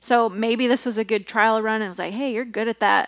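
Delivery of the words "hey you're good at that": usual speaking voice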